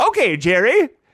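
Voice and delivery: high, closely copied put-on woman's voice. Retelling what the wife said when asked for a key: imitating the wife's voice. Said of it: "in that voice as well?".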